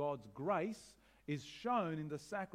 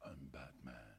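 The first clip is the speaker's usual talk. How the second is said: very deep, soft, hushed, raspy voice; 14 semitones lower, 13 dB quieter than usual.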